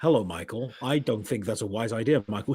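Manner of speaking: bone-dry, sarcastic tone. Mocking a talking car's manner: imitating KITT's dry sarcastic tone. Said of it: "that kind of dry, sarcastic tone".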